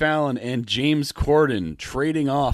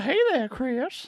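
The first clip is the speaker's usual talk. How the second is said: put-on very high, creepy old man voice; 14 semitones higher than usual. Discussing a possible influence on an actor, doing the creepy old guy from Family Guy. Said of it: "the creepy old guy from Family Guy".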